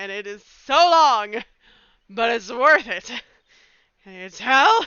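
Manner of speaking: loud, gushing enthusiasm.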